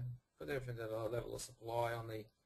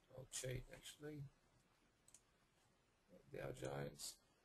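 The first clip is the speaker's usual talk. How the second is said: soft, hoarse, husky voice fading and giving out; 9 dB quieter than usual. Reviewing the futures for listeners during a market update, husky, losing voice. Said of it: "I'm a bit husky and losing my voice".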